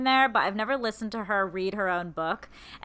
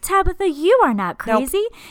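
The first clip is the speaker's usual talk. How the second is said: put-on high, loud, small childlike encouraging voice; 7 semitones higher, 9 dB louder than usual. Imitating an author reading her audiobook: Glennon Doyle's soft voice. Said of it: "Like that".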